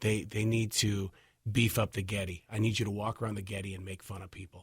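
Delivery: low-pitched buddy impersonation voice.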